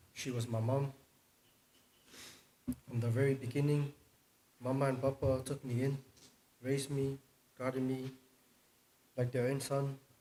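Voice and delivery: nervous, very loud speech. Speaking about being raised by Mama and Papa, nervous speaking. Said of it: "I'm a bit nervous".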